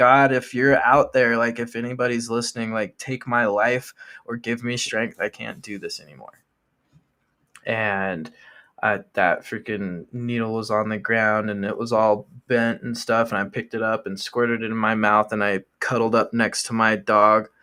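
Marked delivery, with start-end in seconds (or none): 0.0-6.4 tearful, crying voice. Retelling a prayer made on the knees after a breakdown: retelling a crying prayer. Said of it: "and I'm crying, and I'm like".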